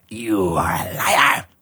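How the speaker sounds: harsh, rasping monster voice. Voicing a creature that catches a player bluffing: raspy creature voice. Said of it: "in a raspy voice".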